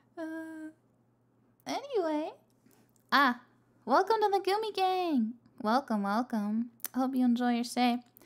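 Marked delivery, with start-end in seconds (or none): 0.2-6.7 high-pitched, pitched-up stream host voice. Streamer welcoming viewers to the gumi gang, in a high-pitched streaming voice. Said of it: "I need to stop talking so like high pitched when I stream".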